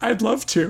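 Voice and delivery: tearful, high-pitched, crying through the words. Voicing a character who accepts an invitation home: crying. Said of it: "And she starts crying, tears welling up".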